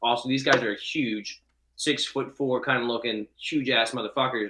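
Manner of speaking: normal talking voice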